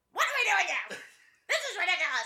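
very high, shrill, swooping, loud squawking bird voice. Redoing the bird's line with the mic held away, loud bird voice. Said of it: "I'm gonna hold the mic away and do that again".

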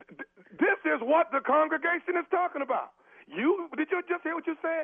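high-pitched, indignant scolding tone.

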